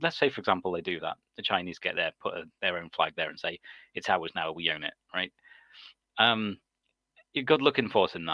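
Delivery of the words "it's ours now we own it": ordinary talk, nothing marked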